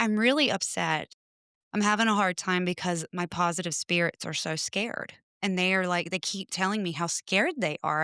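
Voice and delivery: plain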